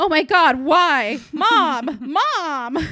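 very slow, high, loud, drawn-out screaming. Retelling a film scene where a character frames another: imitating a character screaming. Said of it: "he starts screaming".

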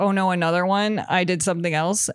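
usual speaking voice

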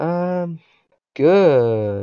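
heavily sarcastic, pitched high. Answering another speaker's question about how the week has been: sarcastic. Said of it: "that was the most sarcastic good I've ever heard".

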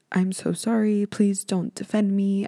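put-on solemn tone. Mocking how anyone can film an apology video: mock-somber apology. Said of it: "in a somber tone".

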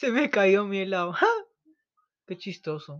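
laughing, swooping, bubbling with laughter. Performing a line after being asked to say it laughing: laughing while talking. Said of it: "Y riendo".

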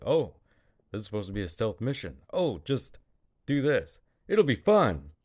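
laid-on griping sarcasm, fast and swooping. Retelling a scene after a character runs off, acting out a sarcastic line. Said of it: "sarcastically he's like".

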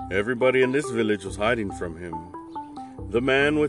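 ordinary delivery, nothing marked

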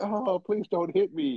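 high, slow, cowardly pleading tone. Acting out a cowardly character's line: mock cowardly pleading. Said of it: "the character's acting cowardly".

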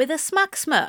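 plain reading voice

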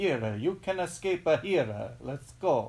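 bad, loud, terrible put-on Italian accent. Recapping Under the Tuscan Sun, voicing what called out to her: terrible Italian accent. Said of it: "terrible Italian accent".

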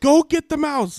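very shrill, very high, very loud yell. Retelling a mouse chase, quoting her yelling at him: retelling her yell. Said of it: "she's yelling at me like".

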